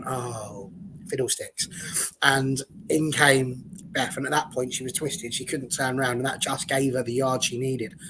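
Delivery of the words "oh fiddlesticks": deflated, soft, slow, whispered mutter. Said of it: "Maya Le Tissier went".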